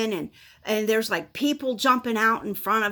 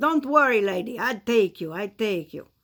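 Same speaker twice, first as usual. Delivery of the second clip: put-on Russian accent, half-managed. Retelling what a long-haired man said to her, imitating a russian accent. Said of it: "kind of more Russian sounding than, than I can do".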